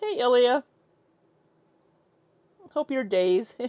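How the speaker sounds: loud, botched put-on Irish accent. Greeting a viewer while attempting a bad irish accent. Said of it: "I know that was so bad".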